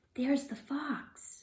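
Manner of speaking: soft, hushed whisper under the breath, slightly high. Reading a story aloud, the narrator voices Rachel's line in a whisper. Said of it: "Rachel whispered".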